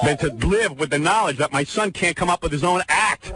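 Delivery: ordinary talk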